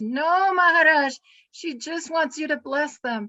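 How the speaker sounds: put-on loud German accent, lunging in. Retelling how Paramadwaiti Maharaj lunged forward to speak: imitating Paramadwaiti Maharaj's loud German voice. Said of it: "he lunged with his loud German voice".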